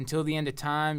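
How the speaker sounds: usual speaking voice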